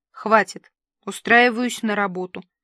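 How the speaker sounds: plain reading voice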